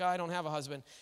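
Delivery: embarrassed, sheepish tone. Retelling a woman's answer when asked to fetch her husband: imitating a sheepish reply. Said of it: "she's kinda sheepishly like".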